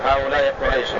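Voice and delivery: ordinary talk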